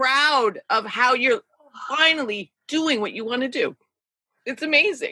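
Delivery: overcome, close to tears. Speaking to the other person on the podcast, emotional. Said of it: "I'm so emotional".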